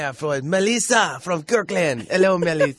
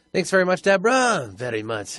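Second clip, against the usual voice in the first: put-on French accent. Thanking someone and saying goodbye at the end of the show, put-on french accent. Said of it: "I get to my French accent again".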